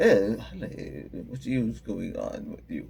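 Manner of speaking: British-sounding voice. Speaker retelling how an assistant named Cal greeted them after a sneeze, imitating Cal's British accent. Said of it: "He was talking to me in the British accent".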